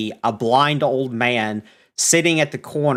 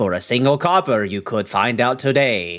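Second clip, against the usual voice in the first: put-on old man character voice. Voicing the old man offering a copper deal: old man character voice. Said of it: "he hears you guys pass and goes".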